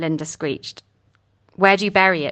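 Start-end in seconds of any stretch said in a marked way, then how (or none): 1.5-2.3 insistent, pressing, demanding tone. Trout presses Kate for an answer, demanding. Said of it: "Trout demanded".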